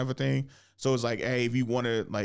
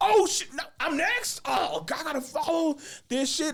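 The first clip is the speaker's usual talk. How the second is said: mock, very high, drawn-out, strung-out panic. Retelling being told he performs next: imitating own past panic. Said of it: "as I'm freaking out".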